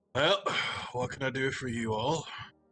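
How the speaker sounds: huge fire giant blacksmith character voice. Voicing a fire giant blacksmith greeting the party: fire giant blacksmith voice. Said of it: "he's a giant. He's like".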